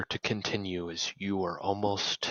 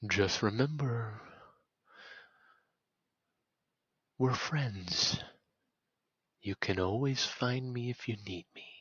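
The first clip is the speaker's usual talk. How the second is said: eerie, mysterious voice; 2 semitones higher than usual. Voicing the voice from the dream, speaking behind the player: mysterious dream voice. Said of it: "the last thing you hear in that voice is".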